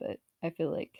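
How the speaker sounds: ordinary delivery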